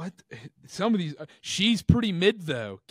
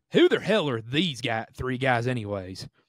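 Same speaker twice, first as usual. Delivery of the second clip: put-on Southern American accent, read aloud; 4 semitones lower than usual. Reading an online comment aloud in a Southern American accent. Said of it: "I'll try and read it in a Southern accent".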